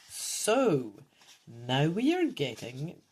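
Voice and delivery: ordinary delivery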